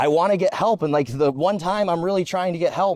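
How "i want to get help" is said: pleading through tears, crying voice. Retelling how she asked for help while crying: imitating someone crying. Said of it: "she was crying, like".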